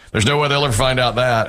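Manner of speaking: normal talking voice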